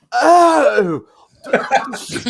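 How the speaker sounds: very loud, drawn-out, blatantly Australian yell. Recounting a moment, the speaker retells a yell in a blatantly australian accent. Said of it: "I yell out in my blatantly Australian accent".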